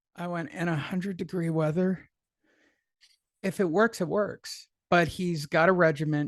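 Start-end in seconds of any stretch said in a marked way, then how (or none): 0.5-2.1 quiet muttering under the breath. Retelling a remark made to a sweaty visitor: muttering under my breath. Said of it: "quietly under my breath".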